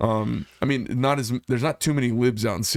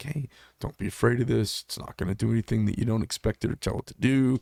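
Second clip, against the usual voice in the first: put-on soothing, calming voice, slowed. Retelling how he talks a shaking, afraid shooter through it, retelling his soothing, slowed voice. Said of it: "I get kind of my soothing voice, and I slow down a little bit".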